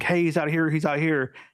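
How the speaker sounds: play-acted, high, shrieking scream. Recounting a flashback scene, voicing the boy who isn't hidden; imitating a scream. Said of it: "screams and is like".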